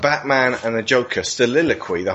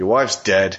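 put-on gruff old detective voice; 3 semitones lower than usual. Acting out a detective telling a man his wife died, in a gruff old detective voice. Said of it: "this gruff old detective who comes in and goes".

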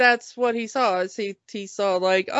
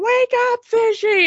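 very high-pitched, screeching scream; 12 semitones higher than usual. Retelling how she screamed at him while he ignored her: retelling a scream. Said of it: "she was screaming".

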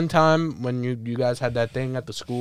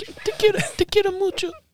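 very high, ridiculing mom voice. Imitating another speaker's mother thanking her son for a gift: mocking imitation of a friend's mother. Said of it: "Wanna keep on ridiculing my mother?".

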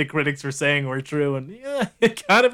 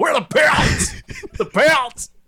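very high, drawn-out yell; 9 semitones higher, 3 dB louder than usual. Retelling a movie scene, imitating Tom Hardy yelling. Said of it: "Tom Hardy always yelling like".

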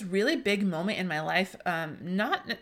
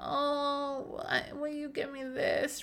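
put-on very slow, high, drawn-out whiny kid voice; 6 semitones higher, 4 dB quieter than usual. Speaker describing kids asking parents for things, imitating a whining child. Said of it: "we don't like when they come in whining".

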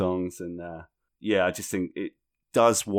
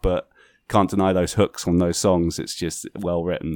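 ordinary talk

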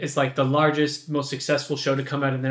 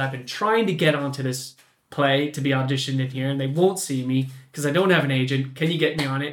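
plain

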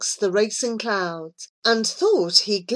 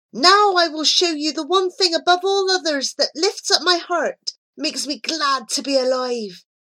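high, ringing shout, voice carrying far; 6 semitones higher than usual. A rider turning the horse eastward shouts out, shouting. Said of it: "he shouted".

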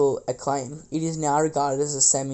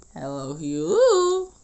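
very high, put-on cracking voice; 3 dB louder than usual. Asked to do a fake voice break, repeating the greeting: fake voice crack. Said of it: "Can you do a fake voice break?".

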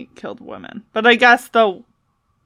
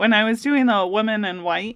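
plain

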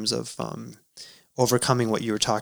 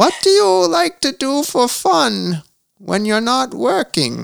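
put-on interviewer voice, very high and swooping; 14 semitones higher, 7 dB louder than usual. Asking a softball interview question, in a Barbara Walters voice. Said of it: "I'll do it in her voice for you".

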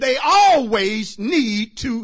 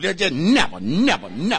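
"never" said sassy and emphatic, full of attitude; 6 semitones lower than usual. Showing listeners how to say the word, said with attitude. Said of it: "you gotta say it with an attitude".

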